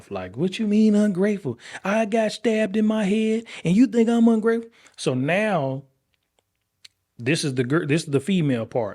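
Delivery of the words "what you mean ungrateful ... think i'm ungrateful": put-on, heated, angry outburst, pitched up. Retelling a daughter's outburst after being called ungrateful: imitating her going off angrily. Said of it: "she just went off".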